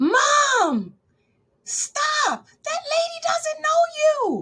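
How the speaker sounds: acted very high, slow, swooping, drawn-out scream. Retelling how someone behind the resident screamed at her: imitating someone screaming. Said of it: "somebody behind her screamed".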